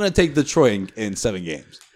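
ordinary delivery

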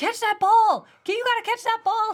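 very high, loud, worked-up shouting. Retelling how he gets emotional watching sports and yells at the tv, imitating someone yelling. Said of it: "Where he's yelling".

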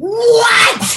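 top-of-the-lungs, very high, loud, shrill, drawn-out scream. Retelling a phone call, re-enacting the moment of screaming at the news. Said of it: "And I screamed".

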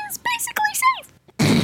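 cute, tiny, inch-tall little voice. A speaker comparing House seats suddenly uses a tiny voice, like an inch tall. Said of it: "You became an inch tall suddenly".

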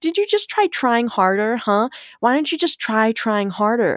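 mock nagging, belittling shaming scold. Explaining a joke shared with clients, the speaker acts out the inner critic in a mock shaming voice. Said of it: "that's that shame voice that's like".

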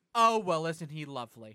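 very loud, booming, carrying voice. Retelling watching something on screen with her, the speaker mimics her comment; retelling a loud remark. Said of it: "She very loudly goes".

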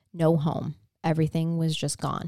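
ordinary talk

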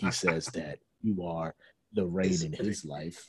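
very low late-night radio DJ voice. Retelling a radio dedication show heard while going to sleep: imitating a radio DJ. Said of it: "and he'd be like".

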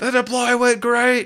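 very high, shrill, loud text-to-speech robot yell. Pitching a Slack bot that yells messages, acting out mock text-to-speech bot yelling. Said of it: "it's like yelling like".

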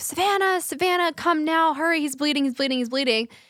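high, dramatic, urgent, alarmed screaming. Retelling hearing Lance scream for Savannah during her skincare video, imitating Lance screaming. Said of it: "I hear Lance screaming, like".

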